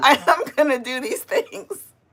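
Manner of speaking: laughing while talking. Listing plans for later, laughing while talking. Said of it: "I don't know why I'm laughing".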